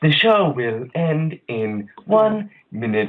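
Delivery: slow, high robotic announcer voice. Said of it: "robotic voice that comes on".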